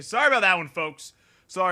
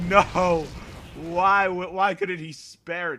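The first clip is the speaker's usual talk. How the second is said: usual speaking voice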